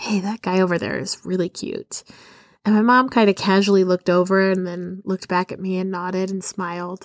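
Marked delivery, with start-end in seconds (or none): 0.0-2.0 whisper, quieter. Retelling leaning over to mom during a wedding: retelling a whisper. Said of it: "I leaned over to my mom and I whispered".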